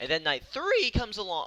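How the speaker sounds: voice cracking up high mid-sentence. Running through the nights of a fight schedule, voice cracking. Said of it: "I just had a voice crack right there".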